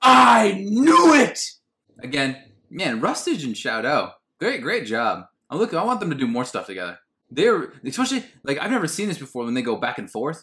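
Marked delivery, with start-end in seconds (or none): 0.0-1.4 very high, loud, excited triumphant shout. Showing how a character should have reacted: Chandler shouting I knew it. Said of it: "like Chandler in that one episode of Friends".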